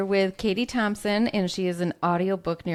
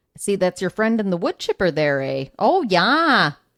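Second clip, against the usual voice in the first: loud put-on Minnesota accent; 5 dB louder than usual. Trying out accents with the other speaker; Minnesota Fargo accent. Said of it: "like a Minnesota Fargo accent".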